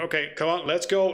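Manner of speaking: anxious, nervous pressing tone. Narrating a scene, voicing a character who urges the others to go, nervous urging. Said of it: "look around nervously as he makes a motion".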